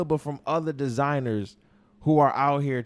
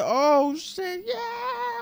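mock, very high, thrilled, excited shriek. Recalling seeing Blue's Clues on Disney on Ice, retelling an excited scream. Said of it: "I'm screaming and shit".

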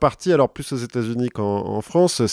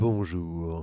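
put-on porn-film style voice; 7 semitones lower, 9 dB quieter than usual. Greeting listeners at the start, teased by the other speaker: porn voice. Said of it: "C'est ta voix de porno".

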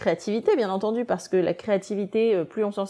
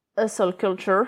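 put-on English accent. Speaking French, the speaker says an English term in a put-on English accent. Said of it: "avec un merveilleux accent anglais".

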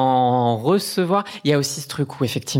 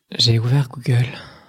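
put-on sexy, sultry voice. Reading out phone searches on request: put-on sexy voice. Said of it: "juste le « j'ai ouvert Google », il était exceptionnel".

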